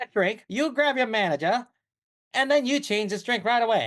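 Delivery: Mid-Atlantic-accented speech. A customer complaining to a bartender about a drink, old-movie Mid-Atlantic accent. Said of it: "I think it's the Mid Atlantic".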